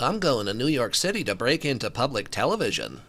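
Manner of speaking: big puppet bird character voice. After being told you remind someone of the big bird, do your Big Bird impression. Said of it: "It's my it's my my Big Bird impression".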